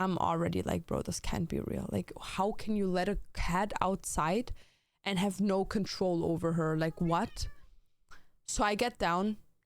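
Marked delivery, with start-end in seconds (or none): none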